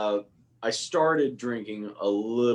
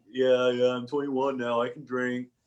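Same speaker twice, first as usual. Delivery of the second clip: put-on young teenager voice. Retelling answering a family member back from the military, in a teenager voice. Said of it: "that's my teenager voice".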